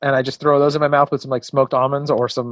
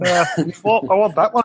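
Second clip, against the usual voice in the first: put-on throaty, back-of-the-throat British accent, pitched up; 5 semitones higher than usual. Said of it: "back of the throat British voice".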